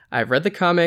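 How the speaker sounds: plain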